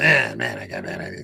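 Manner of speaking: rough, creaky, croaking worm-like creature voice.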